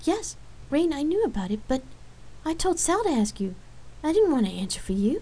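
taken-aback, surprised tone. Accused angrily by another woman, she answers with surprise. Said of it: "answered with surprise".

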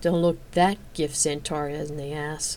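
muttered under her breath. A woman mutters to herself while leaving a dungeon room, under her breath. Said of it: "she muttered under her breath".

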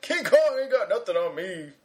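grand, dramatic movie hero line reading. Asked whether it is a line from the movie, deliver it as your Denzel impression. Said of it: "my Denzel to... impression?".

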